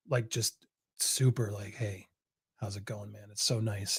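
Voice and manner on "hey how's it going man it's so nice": calm, mellow, quiet and friendly voice. Imitating how Johnny speaks on meeting: imitating Johnny, calm and quiet.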